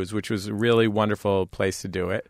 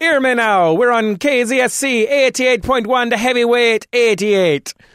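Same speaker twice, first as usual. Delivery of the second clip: put-on patois DJ voice, higher, louder, slower; 13 semitones higher, 7 dB louder than usual. Describing a radio station's official voice, doing its dj talking in patois. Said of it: "talking in patois".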